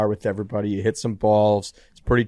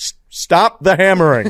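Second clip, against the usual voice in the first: mock forced-calm rattled newscaster voice, higher, louder; 9 semitones higher, 8 dB louder than usual. Imitating a newscaster from a viral video, trying to act not rattled: imitating a rattled newscaster acting calm. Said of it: "he's trying to act not rattled".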